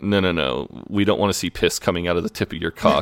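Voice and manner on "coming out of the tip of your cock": normal talking voice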